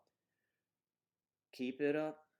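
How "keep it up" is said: stress on "it", said louder.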